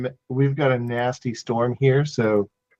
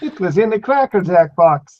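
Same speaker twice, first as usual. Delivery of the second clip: high-pitched cartoon doctor voice; 6 semitones higher, 4 dB louder than usual. Showing one of the only Simpsons voices they can do: Dr. Nick voice. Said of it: "One of the only Simpsons voices I can get".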